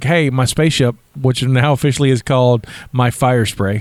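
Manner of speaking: ordinary talk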